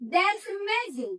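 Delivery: rise-fall pitch on "that's amazing", peaking on amazing. Intonation lesson on strong emotion: rise-fall on that's amazing. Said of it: "intonasinya itu naik kemudian turun".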